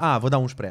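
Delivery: normal talking voice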